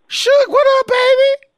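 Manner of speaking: very high squeaky voice. Retelling a greeting line used on meeting someone at a bar: high-pitched voice. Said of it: "And I did that high-pitched voice".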